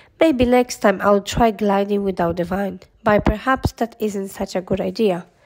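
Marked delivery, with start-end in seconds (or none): none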